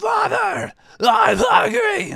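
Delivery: shouting monster voice. Voicing a creature bursting onto the battlefield, yelling. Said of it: "He just yells".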